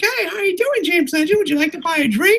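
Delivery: very high, squeaky waitress or maid voice. Retelling young girls dressed as maids greeting customers, in a squeaky maid-costume girl voice. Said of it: "they're all squeaky, like".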